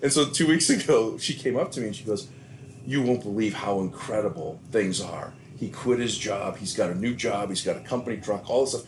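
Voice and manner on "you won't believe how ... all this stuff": ordinary delivery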